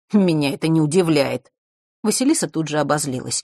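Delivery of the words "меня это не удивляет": scornful, jeering, mocking tone. He replies to her complaint about another girl, mocking. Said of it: "Фэш глумливо фыркнул".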